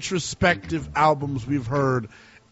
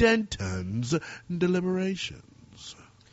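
cool-sounding voice; 4 semitones higher, 5 dB quieter than usual. Announcing the name of a new segment: cool voice. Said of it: "I feel like I have to say it in this cool voice".

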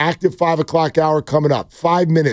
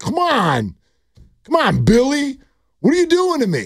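put-on joking annoyed tone, much higher, slower; 9 semitones higher than usual. Retelling what a man said to billy after losing a thousand dollars, tongue-in-cheek complaint. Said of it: "tongue in cheek".

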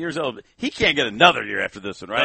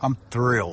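flat, deadpan inflection; 4 semitones lower than usual. Saying one is thrilled about a price plan: deadpan. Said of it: "He's kinda deadpan the whole time".

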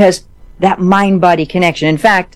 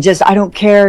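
put-on pleading, begging tone; 2 semitones higher than usual. Retelling begging a doctor to be let into a study, acting out pleading. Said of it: "I was like pleading".

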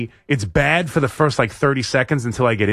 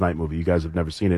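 plain

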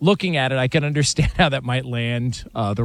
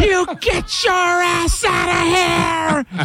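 furious angry yell, very high, very slow, drawn out. Retelling how a dad yelled at a tangled dog: imitating dad yelling angrily. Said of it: "and he just goes".

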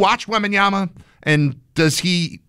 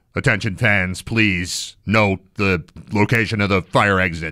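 very low public-address announcer voice; 8 semitones lower than usual. Speaker demonstrates public address announcing with a deepened pa announcer voice. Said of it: "deepening their voice a little bit".

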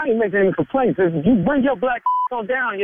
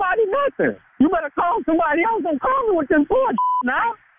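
voice rising, much higher; 10 semitones higher than usual. On the phone, a night-shift worker answers the caller, voice getting high. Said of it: "why your voice getting high?".

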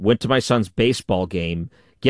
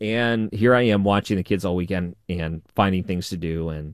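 ordinary delivery

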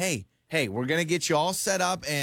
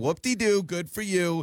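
mocking, sarcastic tone; 2 semitones higher than usual. Pranking a caller on the phone: sarcastic. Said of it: "that is a very sarcastic thing to say".

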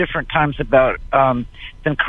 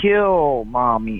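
put-on evil, wicked little doll voice. Retelling what a talking doll said when its string was pulled: evil little wicked voice. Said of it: "in an evil little wicked voice".

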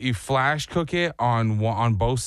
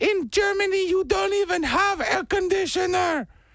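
high-pitched mock German accent. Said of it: "my German accent of your mom".

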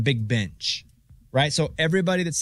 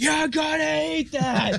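mock scream, much higher, slower; 13 semitones higher than usual. Telling co-hosts about a mom in a restaurant answering her kid, imitating her screaming back. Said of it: "screams right back".

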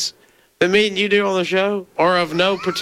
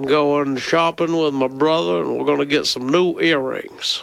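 put-on, genteel Southern gentleman accent; 5 semitones lower than usual. Trading accent bits, a speaker tries out a character: Southern gentleman accent. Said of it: "You are doing the Southern gentleman".

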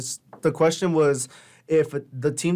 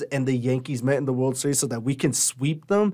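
plain

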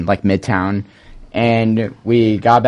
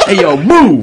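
put-on loud, cliché New York street accent, laid on; 9 semitones higher, 5 dB louder than usual. Retelling what somebody shouted at a guy, stereotypical New York accent. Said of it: "I picture the most stereotypical New York accent".

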